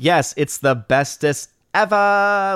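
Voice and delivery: very slow, drawn-out, dripping sarcastic gush. Suggesting a sarcastic reply to a comment: mock sarcastic. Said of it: "with some sarcasm".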